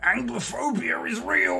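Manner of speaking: put-on angry ranting voice. Answering a request to sound like a douchebag complaining about the wokes: mock angry douchebag complaining. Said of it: "could you say Anglo-centric in more of an angry way".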